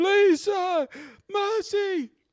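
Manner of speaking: desperate, high-pitched, loud pleading cry. Voicing an enemy who drops to his knees: begging on his knees in character. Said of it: "He drops to his knees".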